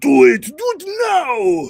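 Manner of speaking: very slow, loud, swooping, with "now" stretched out. Urging listeners to prepare right now: Arnold Schwarzenegger impression. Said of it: "Like Arnold Schwarzenegger used to do".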